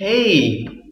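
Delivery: high, bright, mock-cheerful ironic welcome. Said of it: "Irony is saying opposite of what you mean".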